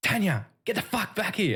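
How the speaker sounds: very high-pitched, angry, loud yell. Retelling a bloke heard in the street early morning: imitating a bloke yelling. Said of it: "And I heard it again".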